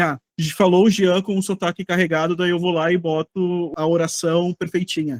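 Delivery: ordinary delivery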